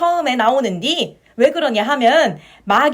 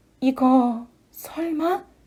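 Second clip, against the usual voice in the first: trembling, shaky, quavering voice, much quieter; 5 dB quieter than usual. Receiving a small recorder held out by another character, in a trembling voice. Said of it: "떨리는 목소리로".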